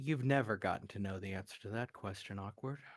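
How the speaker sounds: even, composed, calm voice with quick delivery. Voicing a voice in a character's head answering a question: calm voice. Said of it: "calm voice says".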